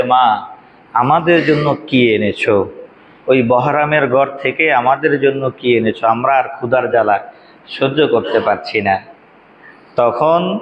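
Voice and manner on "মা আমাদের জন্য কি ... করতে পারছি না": normal talking voice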